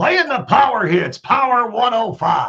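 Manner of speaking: loud radio station promo announcer voice. Describing a voice guy's radio work, the speaker demos it: imitating Dave's radio voice. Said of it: "the voice of your favorite radio station".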